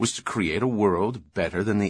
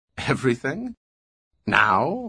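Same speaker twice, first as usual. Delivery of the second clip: speaking through a laugh; 4 semitones higher than usual. A girl answers an old man's question, laughing. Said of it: "Laughed the girl".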